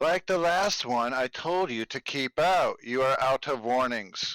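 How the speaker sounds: shouted, yelled mechanical robot voice. A game master voices a murder bot warning the players, in a yelling robotic voice. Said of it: "yelled out in a robotic voice".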